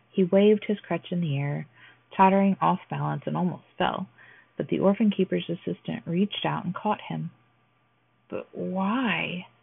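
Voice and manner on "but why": halting, stammering. A young woman answers the offer to live with them, stammered. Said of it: "Stammered the young woman".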